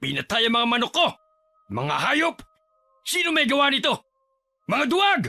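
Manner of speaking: furious, high, outraged angry outburst. A father finds his chickens killed and his wife asks why he shouts; angry shouting. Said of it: "Bakit ka sumisigaw?".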